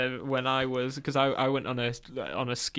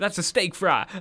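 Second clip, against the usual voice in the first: really bad fake American accent, loud and high; 6 semitones higher, 5 dB louder than usual. Speaker retells what people messaged them, in a really bad American accent. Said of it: "that's my really bad American accent".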